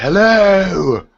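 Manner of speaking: very high, loud, stretched-out shout rising upward. Calling out of a pit in character, yelling out of a pit. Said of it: "I yell out of the pit".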